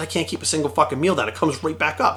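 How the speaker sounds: normal talking voice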